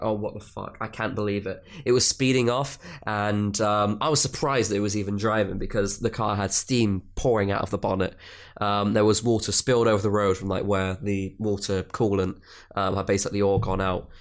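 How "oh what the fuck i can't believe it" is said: put-on hopeless despairing tone, quieter. Retelling watching the other car speed off: retelling own hopeless despair. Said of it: "I felt hopeless".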